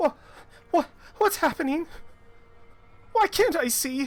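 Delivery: put-on loud, very high little girl's voice. The game master voices a girl echoing in a player's mind: young girl's voice. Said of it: "The voice of a young girl echoes".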